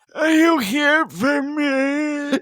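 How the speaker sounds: high voice, word endings drawn out, me stretched. Making fun of a guy's way of talking, imitating Chochim's drawn-out endings. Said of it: "He drags out the end of words".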